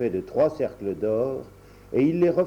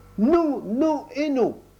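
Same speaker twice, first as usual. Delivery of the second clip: very high, shrill, drawn-out, slow angry outburst; 14 semitones higher than usual. Reading a story aloud, the blackbird answers while stamping a foot, angry. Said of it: "fit mon merle noir en tapant de la patte avec colère".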